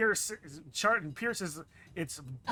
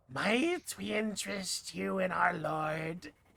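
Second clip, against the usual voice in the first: strange doubled echoing voice, "lord" drawn out; 4 dB quieter than usual. Game master voicing an acolyte addressing a player, in a weird echoey voice. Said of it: "in a weird, echoey voice".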